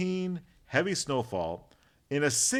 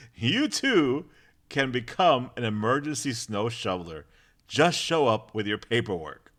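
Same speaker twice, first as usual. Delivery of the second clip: usual speaking voice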